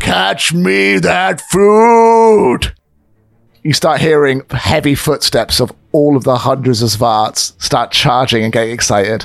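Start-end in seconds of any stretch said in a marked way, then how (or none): 0.0-2.7 high, very slow shout with food stretched out. Voicing Boldark shouting from his balcony as the party leaves: Boldark shouting. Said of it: "you hear him shout".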